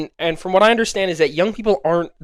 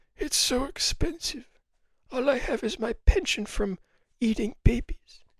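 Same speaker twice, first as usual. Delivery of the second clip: put-on soft, worn, fussy old-person voice; 6 semitones higher, 9 dB quieter than usual. Speaker does an impression of an old person going to the store: old person impression. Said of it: "here's my impression of an old person trying to go to the store".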